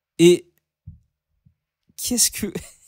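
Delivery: talking through nervous laughter. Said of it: "je rigole, c'est nerveux".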